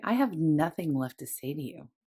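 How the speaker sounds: solemn, very serious, grave and weighty delivery. Recounting a phrase she kept hearing while dyeing her hair, retelling in a very serious tone. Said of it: "Like in a very like serious tone".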